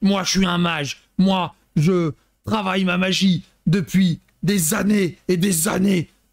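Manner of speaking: put-on French spoken with a slow German accent. Retelling a character in Rocky IV, speaking in a Schwarzenegger-style German accent. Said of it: "Il parle avec un accent allemand un peu Schwarzenegger".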